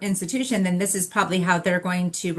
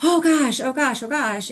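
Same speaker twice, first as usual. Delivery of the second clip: high, suddenly flustered, caught-off-guard exclamations; 7 semitones higher than usual. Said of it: "her tone changed".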